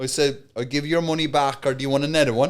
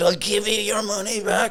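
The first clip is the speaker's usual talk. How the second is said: put-on raised, pitched-up voice; 6 semitones higher than usual. Retelling standing up to a man in a shop, retelling own raised voice. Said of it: "raise in my voice, matching him".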